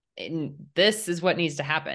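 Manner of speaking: ordinary delivery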